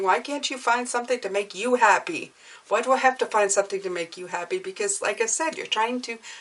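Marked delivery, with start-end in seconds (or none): none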